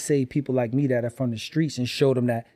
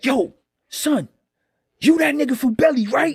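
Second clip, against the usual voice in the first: put-on very high, shrill, aggressive confrontational tone; 13 semitones higher, 5 dB louder than usual. Retelling a stranger who recognized him on a train: imitating an aggressive man. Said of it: "he's so aggressive and causing a, a big scene".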